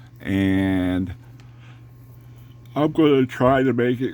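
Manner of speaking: speaking through a yawn. Speaker describing a model car build, yawns mid-sentence: yawning while talking. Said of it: "Excuse me, I'm yawning".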